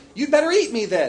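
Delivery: loud, high, storybook-style crying out. A ball of dirt that loves the princess cries out to her: crying out. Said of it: "the ball cried".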